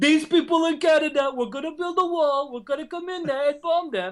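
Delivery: put-on British accent.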